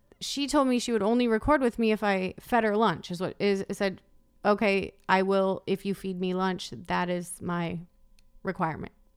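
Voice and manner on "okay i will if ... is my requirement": deadpan, toneless, flat, level monotone. Quoting what Erica said before recording: Erica's flat monotone. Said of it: "she said it monotone, like that".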